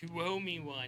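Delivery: put-on big, old, angry, demanding voice. Retelling what the local druid stated to mom, in a put-on big angry voice. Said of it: "in her big old angry voice".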